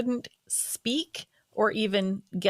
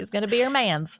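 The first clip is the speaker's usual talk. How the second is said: put-on, fake Southern accent; 2 semitones higher, 3 dB louder than usual. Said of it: "you just brought out the Southern accent".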